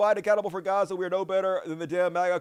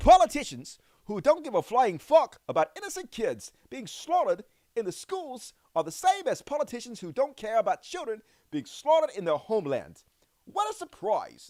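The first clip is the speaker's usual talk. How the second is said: bad, sing-song, put-on New Zealand accent; 3 semitones higher than usual. Reading out a viewer's message in a bad new zealand accent. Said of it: "I gotta do my New Zealand accent".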